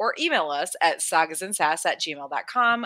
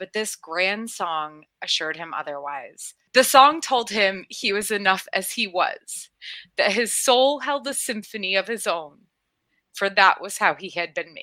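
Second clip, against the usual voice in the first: choked-up, emotional voice, breaking and catching. A podcast host reads a moving story aloud, choking up. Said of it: "I'm choking up so much".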